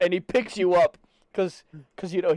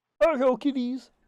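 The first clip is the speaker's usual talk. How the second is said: put-on froggy puppet voice; 7 semitones higher than usual. Given the role of Kermit the Frog, the speaker answers in Kermit the Frog voice. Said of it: "You're Kermit the Frog".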